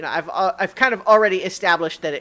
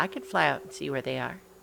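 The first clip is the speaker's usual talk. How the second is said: small put-on tiny voice, soft and creaky; 2 semitones lower, 8 dB quieter than usual. Game master voicing a tiny voice in Iggy's head: tiny little voice. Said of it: "the tiny little uh, voice say".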